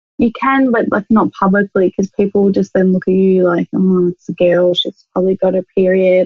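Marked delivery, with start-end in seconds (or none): none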